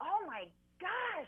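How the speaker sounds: mock-horrified self-realization.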